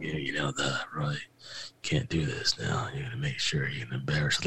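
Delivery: hushed, low, quiet, flat mafia monotone. Retelling a film scene, the team owner speaks in a monotone, mafia-like voice. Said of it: "just very that monotone, like almost like the mafia".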